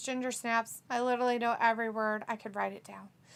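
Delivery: ordinary talk, nothing marked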